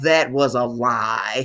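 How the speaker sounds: "lie" held out, big announcer-style delivery. Narrating a story about a couple, Maury Povich voice. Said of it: "in my best Maury Povich voice".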